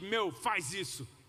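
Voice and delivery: slow, drawn-out, bossy tone.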